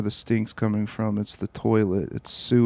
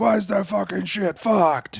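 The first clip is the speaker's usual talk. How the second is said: shrill, very high-pitched yelling shout; 9 semitones higher than usual. Retelling being woken in the dark, imitating someone yelling. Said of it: "I didn't know why you were yelling".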